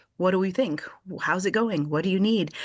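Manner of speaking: ordinary delivery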